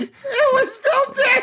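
shouted out, very high. Interrupting the other speaker's charity segment, shouting the punchline. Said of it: "you're shouting your punchline over and over".

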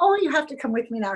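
put-on German accent. Retelling a friend's invitation: imitating a German accent. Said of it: "She had a German accent".

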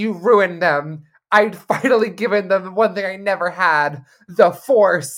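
put-on very loud, bratty five-year-old whining. Quoting a whiny character from this season, in a mock-petulant whine. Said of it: "he sounded so, like, petulant".

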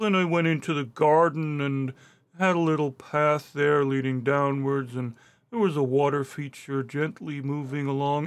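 sleep-inducing, drawn-out Midwestern drawl. Imitating a man whose voice could send you to sleep: Midwestern drawl. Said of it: "Got like this Midwestern kind of drawl".

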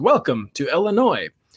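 weird robotic car voice, like a machine announcer. Describing what the family car says when crossing a state line, Toyota Sienna robotic voice. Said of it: "in its really weird robotic voice".

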